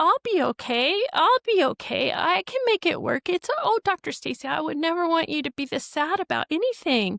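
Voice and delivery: soothing, comforting tone. Retelling how a fired employee consoled the speaker: imitating someone consoling. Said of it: "she started consoling me".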